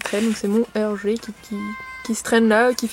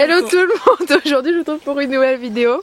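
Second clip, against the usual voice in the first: giggling and laughing through the words; 4 semitones higher, 3 dB louder than usual. Greeting viewers to open a new video: laughing while talking. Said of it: "Désolée si je rigole".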